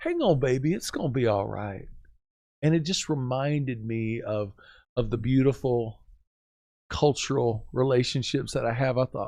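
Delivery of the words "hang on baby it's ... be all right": put-on very Southern, sweet Louisiana accent, sing-song. Speaker retelling what a woman said while rubbing his shoulder: imitating a sweet Louisiana accent. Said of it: "very southern, sweet, a Louisiana flair".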